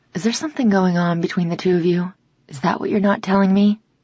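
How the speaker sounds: ordinary delivery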